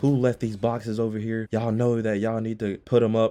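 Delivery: acted boss voice, scolding and yelling. Retelling how a manager called a stocker back in: imitating a manager yelling. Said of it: "he was yelling at him".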